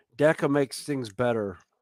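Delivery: ordinary delivery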